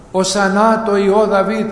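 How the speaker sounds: ordinary delivery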